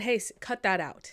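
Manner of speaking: put-on strict dad voice. Retelling how Nick Aldis keeps his people in line, imitating his strict voice. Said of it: "put on like a little bit of a strict voice".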